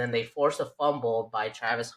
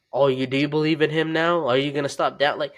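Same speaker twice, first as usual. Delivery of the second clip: gloating, smug, crowing told-you-so tone; 4 semitones higher, 5 dB louder than usual. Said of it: "he made it sound like he just won".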